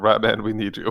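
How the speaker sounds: speaking in a whisper. Calling quietly to a rat character in hiding: whispering. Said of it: "I will whisper".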